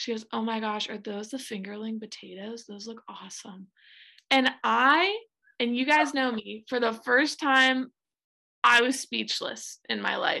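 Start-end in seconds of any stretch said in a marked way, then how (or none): 0.3-3.7 put-on whisper, quieter. Retelling what Sam said at the table: imitating Sam whispering. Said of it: "whispers to herself".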